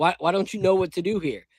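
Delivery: put-on yelling. Retelling a veteran yelling at a teammate: imitating someone yelling. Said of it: "he's yelling at Young Buck".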